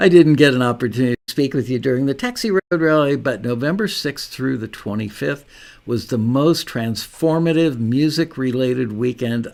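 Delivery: normal talking voice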